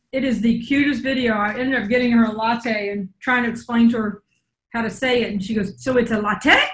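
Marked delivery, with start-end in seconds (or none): 5.8-6.5 slight put-on Puerto Rican accent. Retelling her question after being bought a latte, in a little Puerto Rican accent. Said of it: "in her little Puerto Rican accent".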